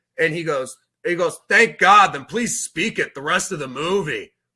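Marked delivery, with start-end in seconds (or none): 1.5-4.3 loud, sudden blurt. Retelling a line a man in the movie said to the kid: imitating a loud remark. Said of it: "that loud, just, like, out".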